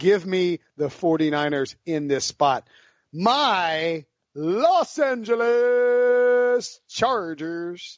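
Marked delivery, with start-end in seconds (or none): 3.1-8.0 high, very slow, weird drawn-out voice. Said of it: "I'm just doing all kinds of weird stuff now".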